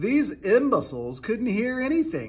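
high, swooping cry, exclaimed through laughter. Narrating the centipede answering friends who urge him to be quiet, crying out, laughing. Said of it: "he cried".

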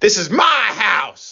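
very high, stretched-out, drawn-out shriek. Retelling how a grandmother screamed at a girlfriend: imitating someone screaming. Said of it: "she screams at my girlfriend".

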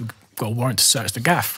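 plain

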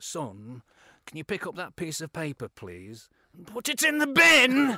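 very loud, swooping, drawn-out, rising, aggressive. Retelling a manager asking a player to bin paper: imitating an aggressive sentence ending. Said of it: "and he would just go".

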